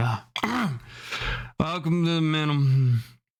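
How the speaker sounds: slow, gruff voice, still waking up. Voicing a shopkeeper who just woke up, greeting a customer: gruff, just-woken voice. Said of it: "you hear a gruff voice that kinda, like, wakes up".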